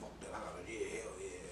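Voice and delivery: low, hushed, resolute whisper.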